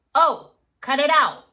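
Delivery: booming, very loud, no-nonsense voice. Speaker demonstrating how dads say something just once, low-pitched dad voice. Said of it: "They have a lower pitch".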